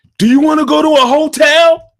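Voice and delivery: abrupt blurt, very high and loud. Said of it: "I just hear him blurt out".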